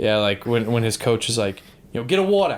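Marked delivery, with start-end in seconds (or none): 1.9-2.6 put-on copied Boston accent, pitched up. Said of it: "talking to each other in Boston accents".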